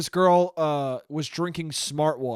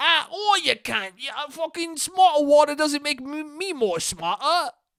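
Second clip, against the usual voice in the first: British accent, pitched very high; 10 semitones higher than usual. Speaker slipping into an accent while talking to listeners: British accent. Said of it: "I'm talking in a British accent".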